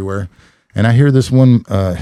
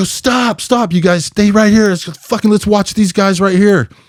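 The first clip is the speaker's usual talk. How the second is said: play-acted, very high-pitched, urgent yelling; 10 semitones higher than usual. Retelling yelling at other guys to stop and stay there: retelling own yell. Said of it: "I yell to these guys".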